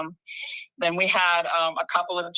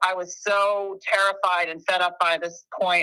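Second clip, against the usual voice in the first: normal talking voice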